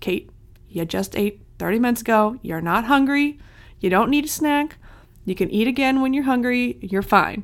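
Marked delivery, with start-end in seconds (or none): none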